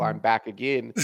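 ordinary talk

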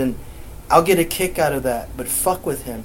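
normal talking voice

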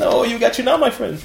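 put-on Arabic-accented speech.

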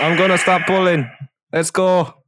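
loud yelling. Playing a character who grabs onto the thing, yelling out. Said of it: "grabs onto the thing and yells out".

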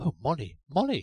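sudden consternation. Charles, turning to go indoors, sees a figure making for the gate; sudden consternation. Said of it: "he said in a tone of sudden consternation".

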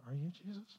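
very quiet half-whisper under the breath. Retelling a friend's quiet question on a mountain trail: retelling a half-whisper. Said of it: "under my breath I said".

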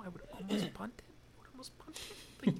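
whispered, hushed, barely voiced. Giving a hesitant football opinion about punting, whispering. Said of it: "I'm whispering this".

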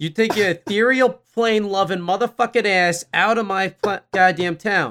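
put-on heavy, laid-on South Boston accent. Voicing an elf in a made-up scene, thick Southie Boston accent. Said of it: "speak with that thick, Southie accent".

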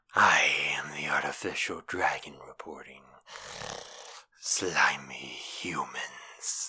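deep, reptile-like dragon monster voice. Showing how they'd voice a reptilian monster: deep reptilian monster voice. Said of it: "reptilian voice".

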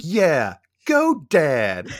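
mock overly enthusiastic, sarcastic, loud sing-song fake cheer. Retelling a character's line from a show episode: imitating Angela, overly enthusiastic. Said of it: "very overly enthusiastic".

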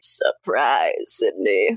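very low, swooping voice-changer growl. Recapping a movie scene where Stu surprises Sydney: Stu's voice-changer voice. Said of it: "that was a pretty good voice there".

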